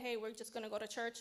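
ordinary talk

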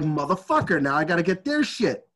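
plain

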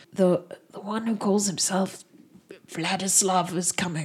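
careful, hushed half-whisper. Voicing a villager warning strangers about a coming threat: half-whispering carefully. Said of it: "he whispers carefully and he says".

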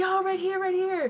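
put-on screaming. Recounting calling out to people throwing T-shirts, retelling a scream. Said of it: "So I'm screaming".

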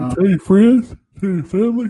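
high voice, spoken through a yawn. A podcast host speaking to listeners, yawning while speaking. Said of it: "Sorry, I'm yawning".

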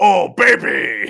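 very loud, high, rough rasping belted cry. Describing a game sticker's sound effect: Wario voice. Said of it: "sticker is Wario saying".

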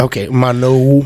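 slowed-down, drawn-out word.

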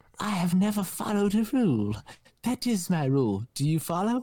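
high, small hobbit voice. Narrating a made-up Batman story, voicing the villain in a hobbit-like voice. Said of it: "you sound like a hobbit".

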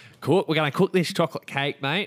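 exaggerated put-on Australian accent. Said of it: "I just said that really Australian".

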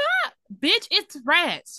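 very slow, loud, high, stretched-out swooping shriek. Recounting a woman who screams after being told not to make a sound, imitating someone screaming. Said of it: "Why the fuck are you screaming?".

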